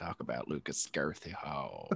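very deep, very slow, stretched-out movie-star voice. Reading a listener question aloud: Matthew McConaughey voice. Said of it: "Matthew McConaughey".

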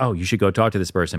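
ordinary talk

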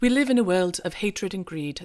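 terrible, bad mock British accent.

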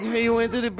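put-on silly, chattering, childish twelve-year-old voice. Mocking the caller's questions, mimicking a twelve-year-old on the phone. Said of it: "it's like you're not two twelve-year-olds on the phone".

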